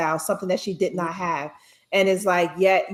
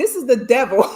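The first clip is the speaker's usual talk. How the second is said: loud put-on Caribbean accent; 5 semitones higher, 6 dB louder than usual. Telling about a woman staring at the snacks at the checkout: imitating a Caribbean accent. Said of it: "she had a Caribbean accent".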